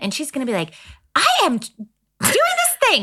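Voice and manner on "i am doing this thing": high, impatient voice. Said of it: "she doesn't like to be rushed".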